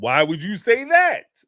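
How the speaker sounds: slight upward pitch lift on the word "that". Teaching how pitch marks a question, the speaker demonstrates rising question intonation. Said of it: "my pitch goes up a little bit".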